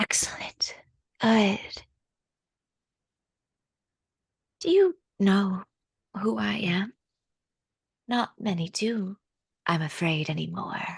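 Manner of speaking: echoing voice coming from all around. Storyteller voicing a lady whose voice surrounds the listeners, echoing voice. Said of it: "hear the voice echoing from around you".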